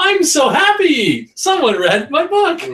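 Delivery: thrilled, delighted, very high, loud gushing. Imitating a guest whose book the host has read, delighted. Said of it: "you can hear their voice just go".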